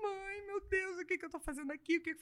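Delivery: acted crying, soft, high and tearful. Recalling calling her mother at the start, retelling crying on the phone. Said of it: "liguei pra minha mãe chorando".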